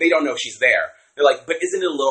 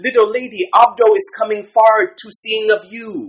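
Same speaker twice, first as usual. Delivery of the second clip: high, called-out yell in a put-on accent; 9 semitones higher, 4 dB louder than usual. Retelling how a man called out to a woman: imitating Abdo yelling. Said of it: "yells it out".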